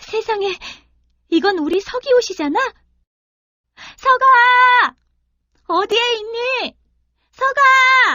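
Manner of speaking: very high, anxious, startled cry of surprise. Older sister finds her brother's clothes on a deer and calls for him, startled shout. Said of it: "하지만 동생은 온데간데 없고 웬 노루 한 마리가 사람의 옷을 입고 서 있었어요. / 그러자 노루를 안은 채 울고 있는 처녀의 모습이 나타났지요. / 그러자 노루를 안은 채 울고 있는 처녀의 모습이 나타났지요".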